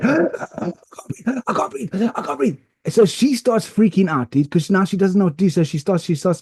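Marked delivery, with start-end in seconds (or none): 0.0-2.6 mock gasping panic, much higher, slower. Retelling his own panic attack to a listener, acting out gasping panic. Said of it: "I'm going like this".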